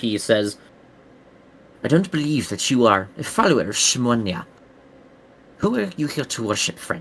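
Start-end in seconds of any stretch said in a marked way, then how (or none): 1.8-7.0 whispered softly. Game master voicing a priest who questions the player, whispering. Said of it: "then he whispers before you get a moment".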